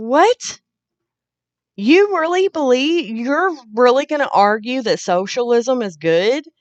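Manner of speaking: high, loud incredulous outburst.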